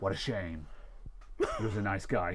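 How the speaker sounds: put-on flat, deadpan voice. Retelling a game character's line after a man dies, deadpan JC impression.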